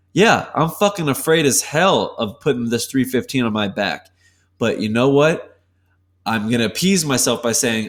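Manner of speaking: ordinary talk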